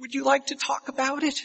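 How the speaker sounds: sweet, high-pitched, gentle voice. Comforting a wailing person with a broken arm, sweet counselor voice. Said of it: "summon your best counselor, sweet voice".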